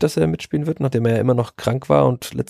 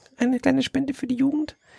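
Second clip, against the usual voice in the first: put-on very high, piping, squeaky little kid's voice; 13 semitones higher, 4 dB quieter than usual. Speaker recalls asking for youth donations at first-team matches: squeaky child voice. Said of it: "wo du diese Kinderstimme nachgemacht hast".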